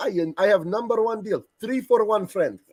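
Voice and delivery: put-on Arabic-accented speech.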